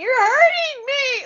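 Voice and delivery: put-on, very high, tearful, crying begging voice. Retelling a childhood hair-brushing, imitating own crying plea. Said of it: "literally crying".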